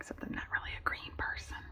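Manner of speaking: soft, fast whispered delivery.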